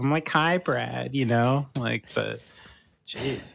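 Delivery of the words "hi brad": put-on cute voice. Speaker mimics how she comes into these intros, mimicking trying to sound cute. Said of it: "try to be a little cute".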